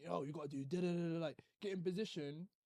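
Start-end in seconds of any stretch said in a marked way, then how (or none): 0.0-1.2 play-acted, passionate screaming. Retelling giving orders to teammates in a first week: imitating own past screaming.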